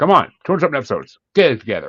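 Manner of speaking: sarcastic. Joking after introducing a guest on the show: snarky. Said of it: "I'm in a snarky mood".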